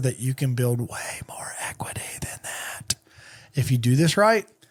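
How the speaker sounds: whispering. Explaining equity to viewers, the speaker drops in a whispered aside. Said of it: "I'm going to whisper".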